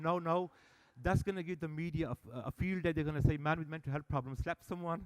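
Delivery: ordinary delivery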